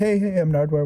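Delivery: dead flat, level, low-key monotone. Retelling how Nardwuar greeted people before his radio show: monotone Nardwuar imitation. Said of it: "just kinda keeping it pretty monotone".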